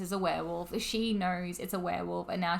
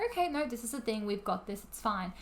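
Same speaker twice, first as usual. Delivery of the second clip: usual speaking voice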